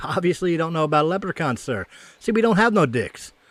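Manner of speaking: smarmy, smug, self-satisfied know-it-all tone. Telling a joke, the leprechaun answers the angry man: smug, smiling. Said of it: "smugly smiling".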